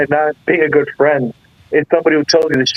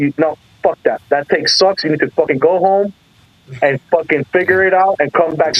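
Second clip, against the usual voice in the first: put-on harsh, blunt, stern dressing-down tone. Retelling how he cut the speaker off after a weak take, retelling a harsh scolding. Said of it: "It was like brutal".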